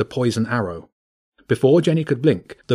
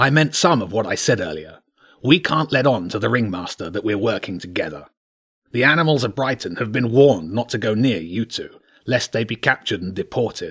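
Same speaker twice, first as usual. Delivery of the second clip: gruff, blunt, urgent, commanding animal king voice. Reading a story, the badger king speaks to the children and animals leaning close; gruff badger king voice.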